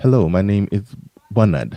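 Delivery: try-hard attempted English accent. Showing someone the line they have to say, attempted English accent. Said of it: "English accent".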